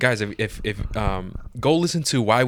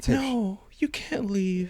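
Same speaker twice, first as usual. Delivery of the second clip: very high, soft, innocent-seductive tone; 11 semitones higher, 4 dB quieter than usual. Complaining about a movie character, the speaker imitates her: mock-seductive soft voice. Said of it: "she talks like that seductive type of voice".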